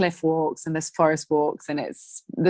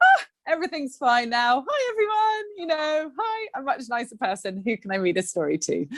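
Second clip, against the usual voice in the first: high-pitched, cheery, relieved, much nicer voice. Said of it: "I come back and I'm like".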